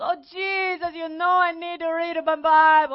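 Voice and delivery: acted pleading, begging. Retelling how a woman prayed to Jesus with eyes closed: imitating someone begging. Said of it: "she's got her eyes closed and begging".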